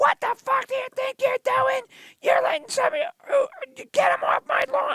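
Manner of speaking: put-on high-pitched, shrill screamed outburst. Recounting how a woman screamed at the speaker from her window, retelling a scream. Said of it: "She screamed at me out the window".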